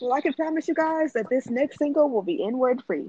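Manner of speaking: polished commercial announcer style voice. Promising the listeners something about the next single, like a commercial. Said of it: "Why did you say it like that?".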